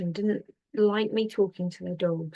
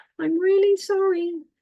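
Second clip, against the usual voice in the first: very high-pitched, raised voice; 12 semitones higher, 6 dB louder than usual. Retelling what a woman behind the speaker said, in a very high-pitched voice. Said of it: "I got a very high pitched voice going".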